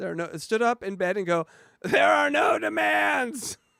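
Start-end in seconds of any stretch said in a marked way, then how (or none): 1.8-3.6 very high, slow, squeaky, creaky, drawn-out funny voice. Retelling how someone stood up in bed and spoke: Eric voice. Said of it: "say it in your Eric voice".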